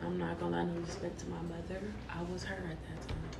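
quiet, hushed voice.

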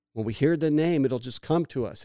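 normal talking voice

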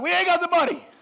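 very high, loud, prickly defensive tone. Retelling a man's reply when asked where to buy bread, mock-defensive. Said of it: "Philip got all defensive".

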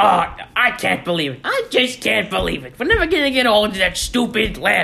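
loud, high, swooping animated cartoon character voice. Saying they can do the voice, then doing it: cartoon character voice. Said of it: "I can do the voice".

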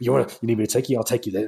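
play-acted angry, spiteful tone. Retelling his reply in the film scene: imitating an angry reply. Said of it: "he just gets really angry".

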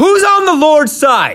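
high, loud rallying yell. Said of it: "he yells out".

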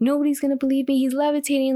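high, play-acted crying through broken sobs. Retell a woman's Spanish words about a man levitating, imitating someone crying and sobbing. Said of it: "she's crying and sobbing like".

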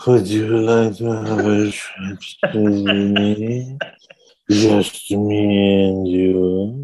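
put-on very slow, half-asleep, barely conscious drawl. Imitating an advert line just heard: Uma Thurman sounding barely conscious. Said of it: "She sounds barely conscious".

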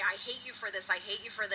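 ordinary delivery

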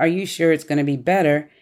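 ordinary talk, nothing marked

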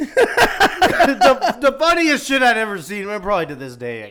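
very high, very loud, shrill talking through laughter. Calling the fall the funniest thing ever seen, laughing hard while talking. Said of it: "I'm laughing so hard".

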